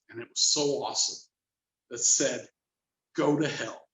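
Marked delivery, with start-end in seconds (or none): 3.2-3.8 low ghostly voice. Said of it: "there was this low voice".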